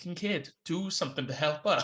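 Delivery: ordinary talk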